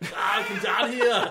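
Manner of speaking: very loud shout, bellowed at full volume. Speaker imagines what if Arnold Schwarzenegger were it: Arnold Schwarzenegger impression. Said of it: "what if Arnold Schwarzenegger was it".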